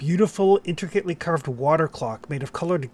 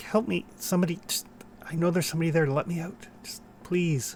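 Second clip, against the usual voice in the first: barely audible, very faint pleading cries; 3 semitones higher, 4 dB quieter than usual. Voicing a trapped figure crying faintly from inside a clock: faint crying for help. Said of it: "you can hear cries like".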